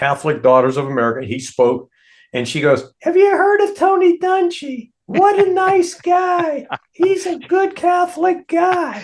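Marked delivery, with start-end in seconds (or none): 3.0-9.0 very high-pitched, slow motherly voice. Retelling what his mom said about a visiting speaker, imitating his mom. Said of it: "is that a really good imitation of your mom?".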